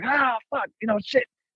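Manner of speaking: shrieking, very high-pitched screamed swearing. Retelling burning a hand on a hot grill: retelling own screaming. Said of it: "screaming. I'm like".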